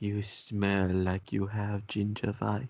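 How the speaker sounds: whispered put-on character voice. Speaking in character back to a mysterious voice: whispering in character. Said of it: "just whisper in the same tone".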